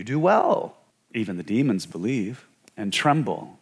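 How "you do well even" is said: usual speaking voice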